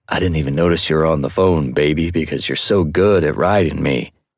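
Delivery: exaggerated, comically low bass voice. Narrator reading a man's mock line to a pretend partner, in a comically low voice. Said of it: "he pitched his voice comically low".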